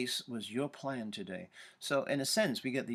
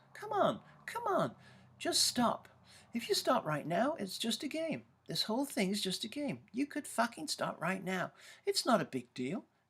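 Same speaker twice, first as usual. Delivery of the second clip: very high, swooping put-on voice; 12 semitones higher than usual. Describing one of the voices inside the person being discussed, high-pitched voice. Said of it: "like high-pitched voice".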